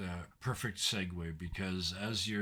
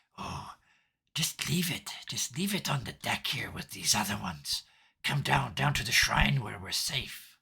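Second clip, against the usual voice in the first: raised, loud demon voice; 4 semitones higher, 6 dB louder than usual. Describing what you hear from the demon in your head: demon voice. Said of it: "your demon ... in your head, you hear".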